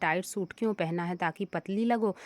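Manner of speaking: ordinary talk, nothing marked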